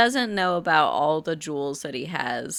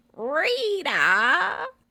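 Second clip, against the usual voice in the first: very high granny voice, pitched way up; 11 semitones higher than usual. Asking another speaker to copy a character: Bluey granny voice. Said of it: "I want you to say it like the granny".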